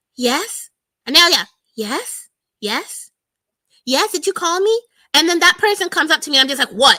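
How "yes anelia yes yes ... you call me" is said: slow, sweet, extra-polite put-on tone. Speaker acts out rehearsing how she'll answer when someone comes in, put-on nice tone. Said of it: "I'm going to say yes in a nice way".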